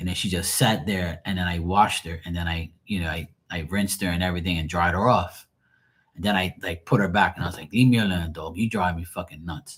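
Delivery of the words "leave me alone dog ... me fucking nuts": acted angry outburst, sounding mad. Retelling scolding the dog after she fell and hit them: retelling an angry outburst. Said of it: "I was so freaking mad".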